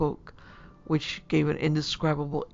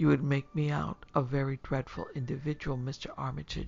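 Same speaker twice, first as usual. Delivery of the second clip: usual speaking voice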